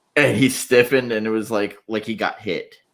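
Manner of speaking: ordinary delivery, nothing marked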